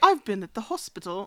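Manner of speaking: put-on English accent. Joking with a co-host on the pod, in an English accent. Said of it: "If you're going to do an English accent".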